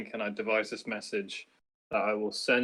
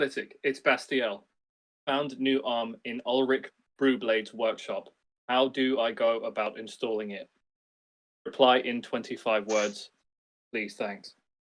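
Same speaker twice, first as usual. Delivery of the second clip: ordinary talk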